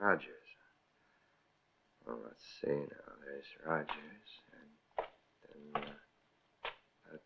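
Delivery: very low, slow, drawn-out muttering. Mulling things over aloud to oneself while another listens: mumbling. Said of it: "what are you mumbling about?".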